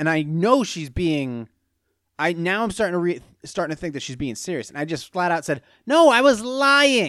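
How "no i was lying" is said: high, slow, drawn-out joking tone.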